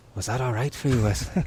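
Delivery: put-on lilting Irish accent. Recalling Liam leaning in between every cut, doing Liam's lilting Irish accent. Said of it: "his like lilty Irish accent".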